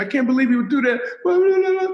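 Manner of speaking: mock distraught, very high, tearful, near sobbing. Retelling a girl on the phone in an elevator: imitating someone almost crying. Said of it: "she's almost crying. She's in tears".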